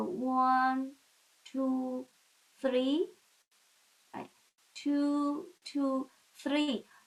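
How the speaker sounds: slow counting pace. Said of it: "I do it very slowly".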